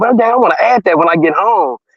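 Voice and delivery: ordinary talk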